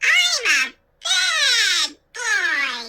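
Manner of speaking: put-on shrill, very high baby voice. A narrator reads the dummy's line as a boy works its mouth: shrill baby voice. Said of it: "the dummy said in a shrill baby voice".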